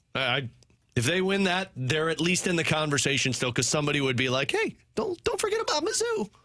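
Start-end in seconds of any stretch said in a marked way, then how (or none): 4.6-6.3 put-on high-pitched voice, even higher. Acting out what somebody would say: high-pitched voice. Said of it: "In that high-pitched voice".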